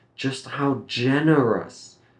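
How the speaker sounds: generous stressed high with a falling tune. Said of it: "You can practice stressing that word".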